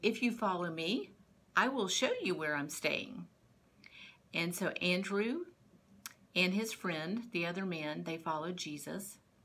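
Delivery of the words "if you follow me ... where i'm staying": ordinary delivery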